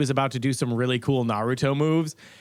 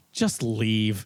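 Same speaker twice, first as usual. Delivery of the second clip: mock-exasperated, put-on exasperation, pitched lower; 4 semitones lower than usual. Retelling how the clerk responded, imitating his most exasperated voice. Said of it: "in the most like exasperated voice".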